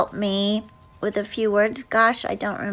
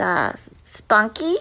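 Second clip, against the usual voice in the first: ordinary delivery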